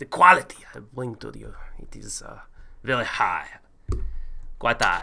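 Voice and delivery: put-on viking character voice. Show your historically accurate Viking to a doubting partner and the chat, doing a Viking impression. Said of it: "Do you think that was an authentic Viking impression?".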